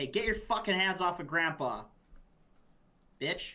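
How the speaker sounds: called across, with a hostile tone. Speaking as a character and calling out to two men threatening an old man: yelling in character. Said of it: "I yell over and I say".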